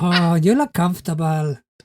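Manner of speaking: put-on Spanish-accented character voice. Voicing a male character, in a put-on Spanish accent. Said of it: "I don't know why I'm giving him a Spanish accent".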